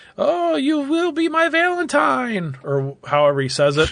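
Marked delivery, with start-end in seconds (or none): 0.2-2.6 frantic, hysterical, very high, drawn-out shriek. Describing a film's ending, acting out the character's line: imitating hysterical screaming. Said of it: "he's kind of screaming like hysterically".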